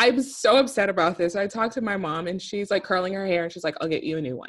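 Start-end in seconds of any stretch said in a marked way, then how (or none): 3.8-4.5 put-on deadpan, flat and expressionless. Retelling how mom answered about the dead guppy, imitating her deadpan. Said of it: "Very deadpan".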